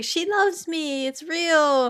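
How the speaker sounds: high, giddy, lovestruck elation, acted out. Describing a character's mood swings, mimicking him on a high. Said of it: "he was on a high".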